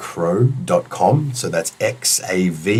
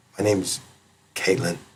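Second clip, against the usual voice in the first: soft, hushed half-whisper, close to the ear; 7 dB quieter than usual. Retelling how a woman said her name in his ear: retelling a half-whisper. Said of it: "she whispers it like".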